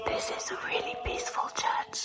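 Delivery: hushed whisper. Alone inside a church during a long walk, whispering. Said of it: "I'm whispering".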